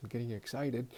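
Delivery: low-key, understated, quiet, hushed voice. Describing what a class will do, then aside: quiet voice. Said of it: "In quiet voice".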